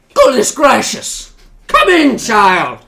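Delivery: put-on very high, very loud, swooping old dwarf voice. Voicing a very old dwarf greeting a visitor: old dwarf voice. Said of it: "he kind of looks to you and he says".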